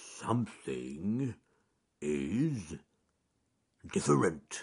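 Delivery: growling, muttered as if to oneself. Reading a story, the just-woken bear talks to himself, growling to himself. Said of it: "he growled to himself".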